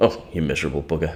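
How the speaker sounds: straight-talking, blunt, matter-of-fact voice. Imitating Mum reacting to someone dwelling on something: imitating Mum's blunt voice. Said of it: "I just imagine her voice going".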